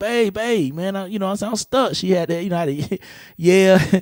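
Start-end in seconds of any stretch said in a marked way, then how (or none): 0.0-1.9 acted-out yell, much higher pitch. Stuck on the lawnmower, he recalls calling out to his wife: retelling a yell. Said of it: "I'm yelling at, to the house like".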